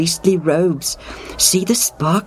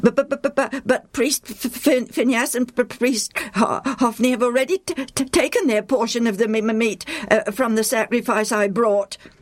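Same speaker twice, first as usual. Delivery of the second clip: furious stammer, higher; 6 semitones higher than usual. Confronting a man who demands sacrifice meat: stammering in fury. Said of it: "Madin stammers in fury".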